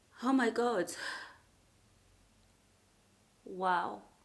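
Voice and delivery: crying while talking. Speaker tells viewers about a book's trigger warnings, crying while talking. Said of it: "why I'm crying over a book".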